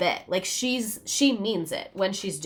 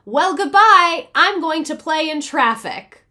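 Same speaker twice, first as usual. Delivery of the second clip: put-on high, loud little-girl voice; 6 semitones higher, 8 dB louder than usual. Speaker retelling what a woman said when exasperated, in an Eloise voice. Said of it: "she'd go into an Eloise voice".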